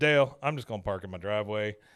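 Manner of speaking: ordinary talk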